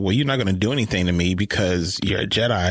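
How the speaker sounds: ordinary talk, nothing marked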